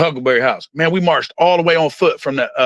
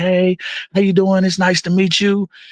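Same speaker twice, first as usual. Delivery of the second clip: mock friendly, put-on nice tone, pitched higher; 6 semitones higher than usual. Retelling how foster parents first greet a child: imitating someone being nice. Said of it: "they're all nice to you".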